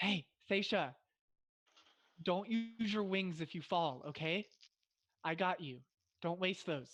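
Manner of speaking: hushed whisper, as quiet as possible. Speaking in character to Seisha across the place: speaking as quietly as possible. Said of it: "as quietly as I can".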